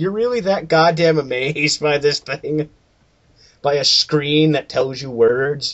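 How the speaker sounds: ordinary delivery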